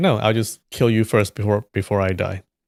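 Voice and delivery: ordinary delivery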